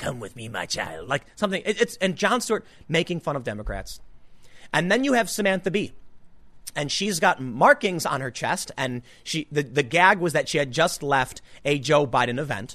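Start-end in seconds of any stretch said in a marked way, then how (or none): 0.0-1.1 very low, sinister, creepy half-whisper. Retelling a comedian's joke about a politician: imitating a dark creepy half-whisper. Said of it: "he whispers something dark and creepy".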